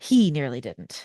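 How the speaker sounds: strange, weird lilt in the phrasing. Speaker presenting a list of stories, weird lilt. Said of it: "I said that with a weird lilt".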